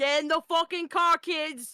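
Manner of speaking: upset, put-on Prague accent. Act out an upset woman calling the kids to the car, in a put-on upset Prague accent. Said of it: "I just gives her a Prague accent when she's, like, up upset".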